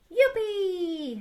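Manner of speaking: high, gleeful, joyful cheer. A lamb cheers the wolf's suggestion, shouting with joy. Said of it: "Gritó Estofado con alegría".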